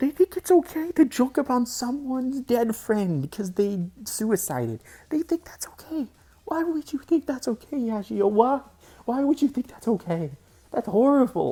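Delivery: upset, high and loud, on the verge of tears. Confronting a person who joked about a friend's death, upset, near tears. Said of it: "I'm actually gonna think I'm gonna cry".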